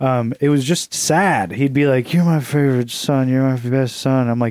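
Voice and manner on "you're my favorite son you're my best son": mock drunk speech, slurred like a drunk. Retelling what a drunk father used to say: imitating a drunk dad. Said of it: "drunk dad from actual dad".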